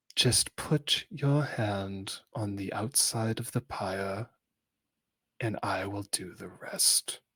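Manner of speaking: skin-crawling, unpleasant, creepy half-whisper, very close. A game master voicing a disgusted character in a tabletop game, unpleasant half-whisper. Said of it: "it's like the most unpleasant whisper possible".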